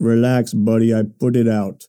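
put-on slow, drawling Russian accent. Retelling what a russian man said when you asked if he was smoking, in a russian accent. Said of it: "This is this Russian guy".

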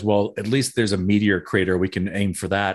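ordinary talk, nothing marked

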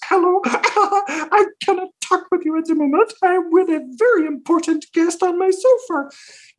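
very high-pitched puppet voice. Retelling an answering-machine message: Miss Piggy voice. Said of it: "Miss Piggy answers the phone and goes".

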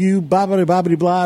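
mock screaming. Retelling screaming at Scott after being bid up, reenacting the scream. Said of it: "started screaming at him and yelling at him".

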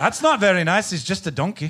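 put-on Scottish accent, pushed further. Asked by another person for more Scottish accent, speaker answers in Scottish accent. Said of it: "give us a little bit more Scottish accent".

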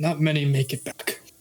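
muttered quietly under the breath. A narrator reads a character's warning, said under his breath. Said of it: "and he says this under his breath".

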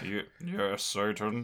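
dry deadpan put-on voice. Imagining a different actor in the comedy role: dry Alan Rickman delivery. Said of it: "his delivery would just be, like, so dry. He'd be like".

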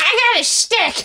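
high, slow, excited dog-like glee. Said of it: "I felt like a dog grabbing a bunch of sticks".

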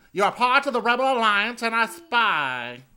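very high, very loud, shrill nasal British voice. Describing on-set video of him, imitating a nasal British voice. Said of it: "It's nasal British".

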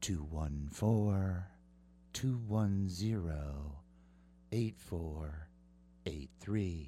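casual, low, unpolished, offhand delivery. Repeating the text-in number for listeners, in a non-professional voice. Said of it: "Let me do it in a non-professional voice".

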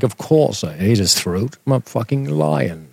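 cool, relaxed lion character voice. Voicing a talking big cat that sounds like Tim Curry: Tim Curry voice. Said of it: "It'd be like Tim Curry".

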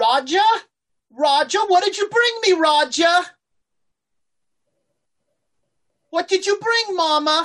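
put-on very high, mysterious voice with British accent. Voicing a mysterious voice heard by the players: mysterious voice with British accent. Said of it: "you hear a voice say".

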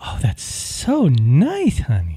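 sugary feminine sing-song, very slow and drawn out. Coaching a partner on speaking feminine, giving an example answer, really feminine. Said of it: "something really feminine".

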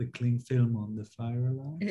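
soft, hushed, sheepish half-whisper. Confessing something on camera during a Zoom chat, half-whispering. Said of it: "Now he's whispering".

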